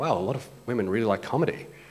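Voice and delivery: normal talking voice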